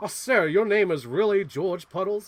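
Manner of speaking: high southern cartoon rooster voice. Retelling a character's line from Joker 2, in Foghorn Leghorn voice. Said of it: "he does a foghorn leg voice".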